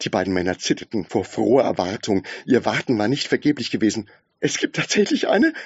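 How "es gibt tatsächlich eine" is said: breathed out, pitched very high. One of two waiting men reacts to the announced answer, breathing the words.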